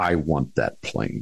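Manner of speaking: low, firm, loud voice. Retelling what he said after pounding his fist on the desk: retelling a loud, firm line. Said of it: "he says in a loud, firm voice".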